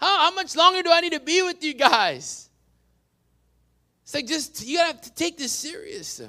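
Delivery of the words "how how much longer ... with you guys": louder, irritated, frustrated, exasperated, rising higher. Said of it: "he gets irritated and frustrated".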